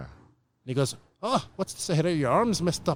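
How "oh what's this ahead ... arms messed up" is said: badly done, failed put-on Irish accent. Retelling what a man asked you while you were tunneling in London, in a failed Irish accent. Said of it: "That was my failed attempt at an Irish accent".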